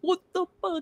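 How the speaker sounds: put-on shrill, very high, angry outburst in Brooklyn accent. Retelling own words when angry: imitating own angry accent. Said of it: "When I get angry, I'm like".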